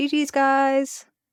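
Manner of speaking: fake high-pitched girly voice. Speaker describing how they taunt raging players; put-on high-pitched girly voice. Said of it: "a really high pitched girly voice".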